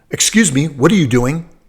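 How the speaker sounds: put-on booming voice. Recalling the company president walking up from behind, retelling a booming voice. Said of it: "in a kind of a booming voice ask me".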